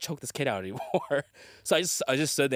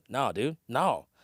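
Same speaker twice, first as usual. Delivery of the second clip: acted laid-back, unbothered, cool, dismissive tone. Retelling how a kid refused to give their things back: imitating a cool, dismissive kid. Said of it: "he was so cool".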